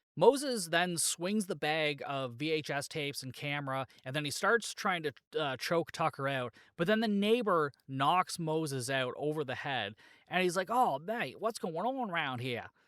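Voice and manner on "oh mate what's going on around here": bad, fake, terrible put-on Australian accent. Recapping an episode where a neighbour knocks someone out; bad Australian accent. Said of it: "terrible attempt at an Australian accent".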